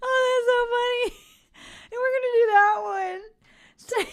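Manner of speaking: laughing while talking. Picking a funny phrase for a page, laughing while talking. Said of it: "I can't stop laughing".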